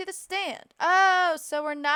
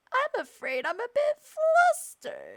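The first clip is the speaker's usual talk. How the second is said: put-on hoarse, high, swooping old lady voice; 8 semitones higher than usual. Voicing an old lady witness in a game: sore-throat old lady voice. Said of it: "sore throat".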